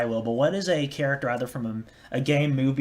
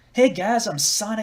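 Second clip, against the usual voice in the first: high-pitched, slow southern drawl; 8 semitones higher, 4 dB louder than usual. Speaker tries out a voice after not practicing long, in a southern-sounding Sonic voice. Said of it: "That sounded really southern".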